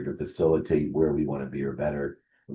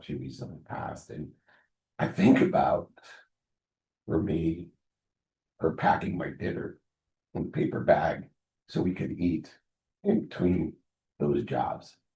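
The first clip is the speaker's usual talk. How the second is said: choked-up, halting, voice catching with emotion. Speaker remembering a single mom who worked two jobs, choking up. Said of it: "if I sound like I'm choking up".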